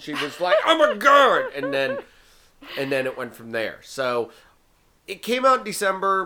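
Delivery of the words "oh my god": put-on excitement, much higher, louder and slower. Retelling showing Ellen a trailer and her reaction, imitating Ellen's excited exclaim. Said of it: "you cannot contain your excitement".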